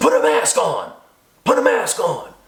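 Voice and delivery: very slow, drawn-out, swooping, half-yelled. Retelling how a man in a grocery store yelled at his wife: imitating a man screaming. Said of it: "he screamed and said".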